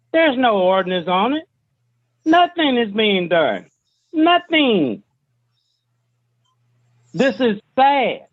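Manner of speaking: sounding frustrated. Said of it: "I hear the frustration in your voice".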